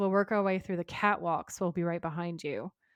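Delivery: ordinary delivery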